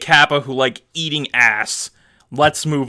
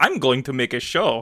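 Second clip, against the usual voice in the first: put-on Italian accent; 3 dB quieter than usual. Imitating Ikuhara announcing a new show: Mario voice. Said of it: "Why is he Italian?".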